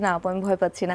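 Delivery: ordinary talk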